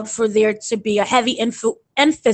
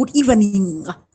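put-on over-enunciated broadcast-style accent, every syllable crisp. Explaining an accent a guy on TV used, over-enunciated accent from TV. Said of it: "just enunciated everything".

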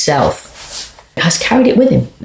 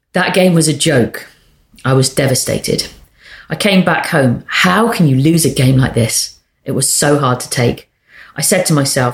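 plain

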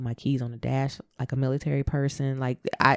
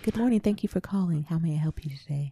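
put-on, polite customer service telephone voice; 4 semitones higher, 3 dB quieter than usual. Explaining code switching, the speaker demonstrates a telephone voice. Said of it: "Or your telephone voice".

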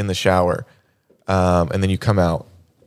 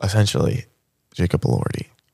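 whispered under the breath, as an aside. On a podcast, worried a parent might be listening, whispering. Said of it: "Why are you whispering?".

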